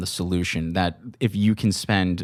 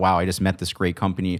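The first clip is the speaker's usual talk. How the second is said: ordinary delivery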